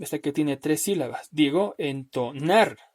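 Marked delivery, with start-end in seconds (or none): 1.8-2.7 entonar, stress on final syllable nar. Teaching Spanish word stress, stress on nar in entonar. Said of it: "le doy mayor golpe de voz a la palabra, a la sílaba, perdón, nar".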